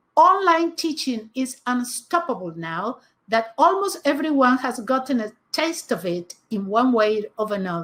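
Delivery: plain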